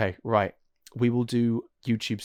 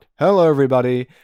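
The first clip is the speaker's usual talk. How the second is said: loud, booming, belted-out voice; 4 semitones higher, 11 dB louder than usual. Retelling being asked at eleven to greet everybody like a lookalike, do a Markiplier impression. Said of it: "do it like Mark".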